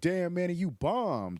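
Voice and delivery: high, loud, yelled call. Comic retelling how a guy in the audience yelled at him after his set, retelling a heckler's yell.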